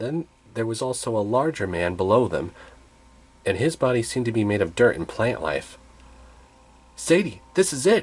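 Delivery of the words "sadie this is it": eager, urgent, excited, pitched-up exclaiming. Spotting five figures, one character exclaims to his companion. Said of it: "Carter exclaimed".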